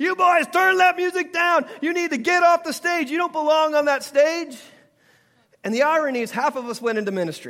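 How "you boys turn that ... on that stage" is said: high, loud, scolding yelled voice. Retelling how Missus Butler ran in and yelled at the band: imitating a woman yelling. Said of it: "she'd start yelling at us".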